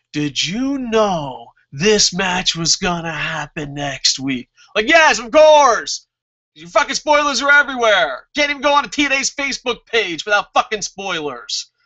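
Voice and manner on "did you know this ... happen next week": deliberate, overly slow, drawn-out, really slow delivery. Retelling how the wrestlers talked in a promo: imitating someone talking really slow. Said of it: "them talking really slow to me".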